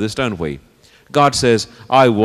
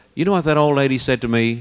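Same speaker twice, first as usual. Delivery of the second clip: plain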